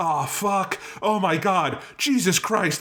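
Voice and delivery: high mock yelling, blurted out and excited.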